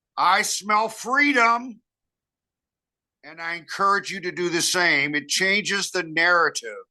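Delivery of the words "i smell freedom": booming, hearty, loud, boisterous, high-pitched exclamation. Showing what they say whenever they smell cannabis, loud, boisterous voice. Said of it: "I say in a loud, boisterous voice".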